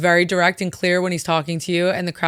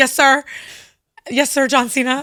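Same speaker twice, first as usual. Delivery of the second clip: put-on, keen, puppy-dog eagerness, high-pitched; 7 semitones higher, 3 dB louder than usual. Retelling answering a wrestler on the apron: retelling eager puppy-dog reply. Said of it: "on the apron like a puppy dog".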